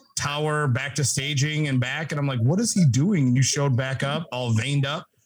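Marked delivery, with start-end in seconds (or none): none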